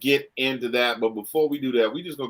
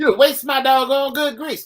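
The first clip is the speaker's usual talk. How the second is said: very high, raised, motherly scolding voice; 7 dB louder than usual. Speaker recalling getting whooped over kitchen grease, imitating his mother's voice. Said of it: "the closest approximation I can do of my mother's voice".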